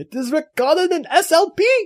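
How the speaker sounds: put-on failed German accent, very high. Voicing a character in a bit, in a bad german accent. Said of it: "That that wasn't even close to a German accent".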